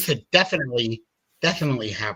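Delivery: speaking with a lisp. Amid crosstalk, speaker notices a lisp on one word, talking with a lisp. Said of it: "it's like I'm talking with a lisp now".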